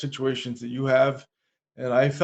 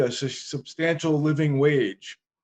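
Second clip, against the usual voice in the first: slow, drawn-out sarcasm, laid on heavily. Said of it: "kinda sarcastically".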